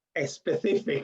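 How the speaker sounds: strong Spanish accent on the word "specific". Saying a word when asked by the other speaker: strong Spanish accent on specific. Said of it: "can you say specific for me?".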